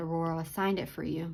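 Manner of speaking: usual speaking voice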